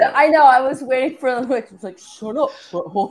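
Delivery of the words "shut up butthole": mock cartoon teenager voice. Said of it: "That sounds like Beavis from Beavis and Butthead".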